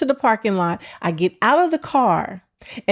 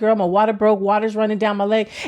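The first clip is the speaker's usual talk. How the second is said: plain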